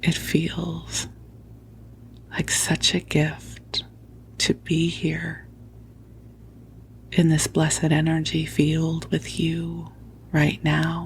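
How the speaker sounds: soft whisper. Recording under a blanket fort for the listener, whispering into the microphone. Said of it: "I'm whispering into the microphone".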